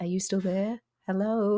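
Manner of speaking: small, sweet, cute, tiny little voice. Describing enemies that talk after you tip them over; cute little voice. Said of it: "they have cute little voices like".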